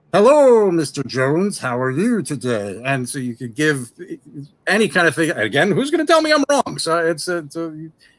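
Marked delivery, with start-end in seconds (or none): 0.1-2.8 slow fetus character voice. Showing how to voice a zombie-story boss, a fetus in a jar: voice of a fetus in a jar. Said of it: "so you can talk like this".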